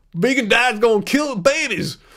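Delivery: put-on scornful, mocking hater voice. Mimicking what haters say about vegan diets: put-on hater accent. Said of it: "That's my hater accent".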